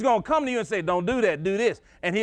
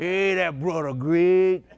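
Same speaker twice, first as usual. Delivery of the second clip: deep, imitated college freshman voice; 3 semitones lower than usual. Recalling a college freshman they liked, doing Big Mike's big deep voice. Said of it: "He's talk like that".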